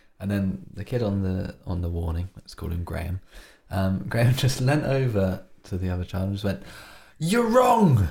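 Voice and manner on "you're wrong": mock shout, much higher and louder. Recounting how one child leaned over to another child; retelling a loud shout. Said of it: "Just really loudly, right in his face".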